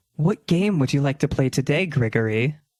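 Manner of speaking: sultry smart-assistant voice. Telling a story, the speaker imitates a game console greeting its owner, mock-sultry female voice. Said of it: "sultry female voice just say".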